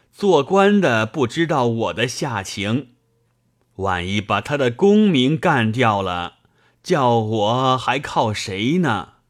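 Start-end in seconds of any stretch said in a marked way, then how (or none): none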